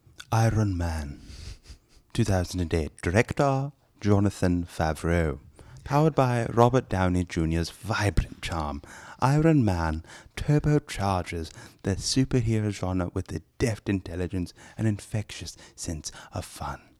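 put-on stuffy British accent. Introduced as Sir Giles, a host summarizes the episode's movie in a stuffy British voice. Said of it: "in a stuffy British voice".

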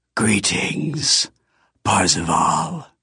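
raspy, rasping voice. A figure greets the narrator in a rasping voice. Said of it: "He said in a rasping voice".

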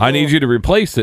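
ordinary talk, nothing marked

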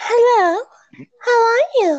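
put-on very high-pitched anime heroine girl voice. The speaker tries out an anime girl voice for a friend: attempted anime girl voice. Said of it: "like an anime girl voice".

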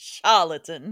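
put-on old Louisiana plantation owner character voice. Trying out character voices with the other speaker, plantation owner voice. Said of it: "plantation owner".

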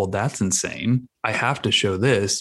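plain

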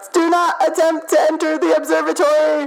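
high, shouted, pushy computer voice. A narrator voices the computer as the players open the other door: shouting computer voice. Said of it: "the computer shouts".

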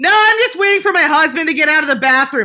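very loud, very high, shrill full-volume shouting. Retelling a show story, speaker quotes a lady in the aisle, imitating her shouting. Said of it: "like full volume".

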